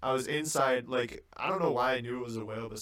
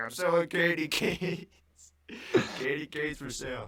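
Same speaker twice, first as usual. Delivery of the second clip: high, drawn-out, slow hawker's call; 5 semitones higher than usual. Retelling a man running around selling candy canes, imitating Plankton yelling. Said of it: "yelling in like the super Plankton voice".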